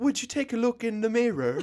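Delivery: put-on high-pitched, old-timey sixteen-hundreds British gentleman accent. Joking about talking to a mirror, the speaker puts on an old-timey British man voice. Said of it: "I sound like an old time sixteen hundreds like British man".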